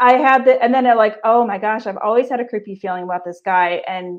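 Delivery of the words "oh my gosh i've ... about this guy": usual speaking voice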